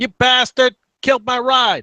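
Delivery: very high, loud, shrill pixie voice. Narrating a game, a pixie beside Sully reacts to the destroyed ride, high-pitched pixie voice. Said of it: "a high-pitched voice".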